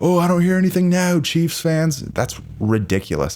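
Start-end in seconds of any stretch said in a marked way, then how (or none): 0.0-2.0 acted, high-pitched scream at full tilt. Speaker mimics a man taunting chiefs fans after a win, imitating someone screaming. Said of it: "he's screaming like".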